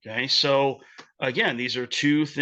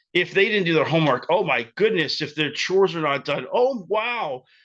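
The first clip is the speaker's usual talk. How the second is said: put-on shock and alarm, dripping with sarcasm; 3 semitones higher, 3 dB louder than usual. Mocking a parent's reaction to undone homework and chores: sarcastic mock alarm. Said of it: "Yes, that's sarcastic".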